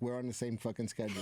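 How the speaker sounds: normal talking voice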